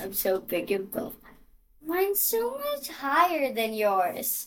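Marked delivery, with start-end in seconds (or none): 0.0-1.1 put-on, mock boyish voice. Playing around with a put-on boy voice: put-on boy voice. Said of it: "This is like me sounding like a boy".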